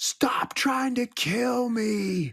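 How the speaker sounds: put-on, very high, frantic, panicked yell. Retelling how Bo woke Johnny in the night, retelling Bo's yell. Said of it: "Bo yelling at him like".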